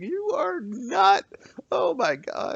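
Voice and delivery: laughing while talking. Voicing a character as someone pushes into the house: laughing while talking. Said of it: "Vig is laughing her ass off".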